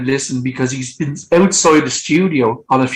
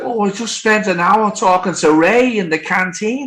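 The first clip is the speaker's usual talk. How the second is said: put-on pitched-up Liverpool Scouse accent; 6 semitones higher than usual. Retelling what you said to the band's bass player, in a scouse accent. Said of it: "That's my Scouse accent".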